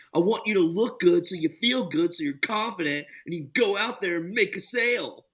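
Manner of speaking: high, mild, hard-sell yell. Retelling what a sales trainer yells at salesmen: imitating Andy Elliott screaming. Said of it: "screams at him the whole time".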